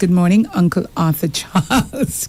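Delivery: normal talking voice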